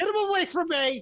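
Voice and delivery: shrill, very high, full-volume shout. A character being accosted calls out to the others, yelling. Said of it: "Stop yelling".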